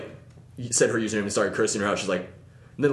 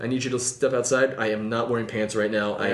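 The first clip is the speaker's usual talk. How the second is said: ordinary talk, nothing marked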